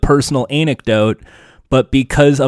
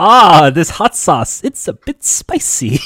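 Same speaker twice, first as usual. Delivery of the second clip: slow, understated, put-on mild reaction; 4 semitones higher than usual. Acting out a guest reacting to hot sauce: imitating own show reaction. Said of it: "Is that how you would react on the show?".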